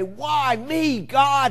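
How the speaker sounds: angry, demanding cry, high-pitched and loud. Speaking to an audience, showing one way to ask why me: angry voice. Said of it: "raise our angry voices and say".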